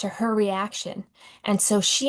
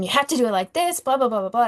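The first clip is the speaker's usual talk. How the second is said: mock frantic, rushed, attacking tone; 3 semitones higher than usual. Retelling how an older coworker corrected a new worker: imitating a frantic scolding. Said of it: "very frantic, very, uh, kind of attacking him".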